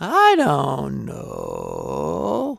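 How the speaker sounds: low, grinding, creaky fry at the voice's floor. Demonstrating vocal register transitions, moving into low vocal fry. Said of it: "going into the lower Fry".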